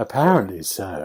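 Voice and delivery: put-on posh accent. Quoting the other speaker's words back, imitating a posh accent. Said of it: "You suddenly changed your accent".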